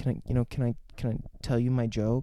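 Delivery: mock very sad voice. Retelling a film scene where she asks to tell her joke: imitating a sad voice. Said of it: "in the saddest way".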